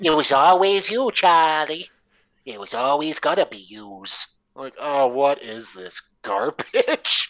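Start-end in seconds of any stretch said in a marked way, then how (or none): 0.1-4.4 put-on tough New York accent, higher. Mocking an actor's tough talk: tough-talking New York accent, imitating Dempsey. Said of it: "trying to talk tough with that New York accent".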